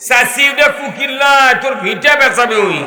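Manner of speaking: shouting.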